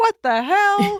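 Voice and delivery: very high-pitched, sudden dad-voice outburst. Retelling waking up to an all-caps reaction, speaker does Home Jim impression. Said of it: "I'm doing home Jim's impression".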